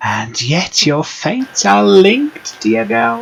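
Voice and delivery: very high, crackly, crackling voice. A woman giving a fortune addresses a girl, in a crackling voice. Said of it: "Her voice crackles like dry weeds".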